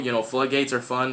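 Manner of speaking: ordinary talk, nothing marked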